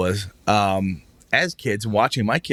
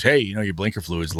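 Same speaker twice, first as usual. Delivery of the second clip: usual speaking voice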